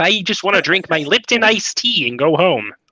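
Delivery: high-pitched frog-puppet character voice. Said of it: "you sounds like Kermit the Frog".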